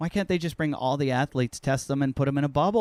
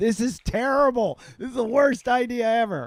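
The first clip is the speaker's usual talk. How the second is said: acted, high-pitched screaming; 9 semitones higher, 4 dB louder than usual. Recalling hurdle drills in college: retelling own screaming at them. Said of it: "I'm like screaming at them".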